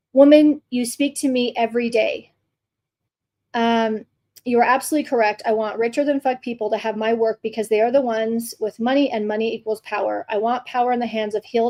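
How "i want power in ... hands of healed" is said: normal talking voice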